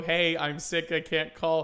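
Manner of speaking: plain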